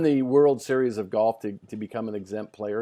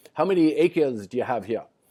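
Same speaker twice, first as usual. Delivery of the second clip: put-on relaxed South African accent; 2 semitones higher than usual. Retelling Fulton asking a Scottish farmer about his land, South African accent. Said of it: "he says to him in his South African accent".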